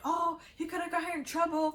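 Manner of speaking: high, angry, scolding shout. Retelling how her brother and another person yelled at them: retelling a scream. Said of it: "they were screaming".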